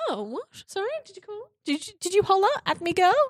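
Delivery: flustered, startled, very high and rising voice. Retelling the scene where a shout startles him: imitating Sweeney Todd startled. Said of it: "And he's like".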